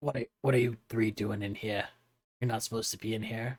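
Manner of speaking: very quiet, careful, hushed voice. In a game, a character finds three people where they shouldn't be at nap time, hushed tone. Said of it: "a little bit of a hushed tone".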